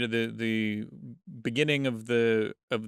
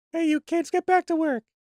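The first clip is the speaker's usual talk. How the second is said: very high, loud falsetto voice; 5 dB louder than usual. Suggesting a different alien voice for the film, in a high-pitched falsetto. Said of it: "Like a high pitched".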